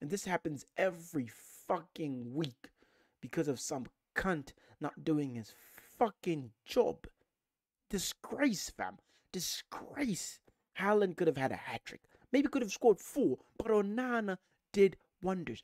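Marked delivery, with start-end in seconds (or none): 0.0-10.4 fuming, bitter, furious rant held low. Ranting to viewers after a football match, furious. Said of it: "I'm fucking furious".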